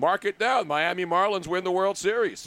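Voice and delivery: ordinary talk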